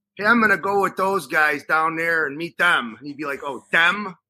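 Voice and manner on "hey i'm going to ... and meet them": put-on Chicago street accent. A speaker retelling how they once talked, in their street Chicago accent. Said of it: "used my street Chicago accent and said".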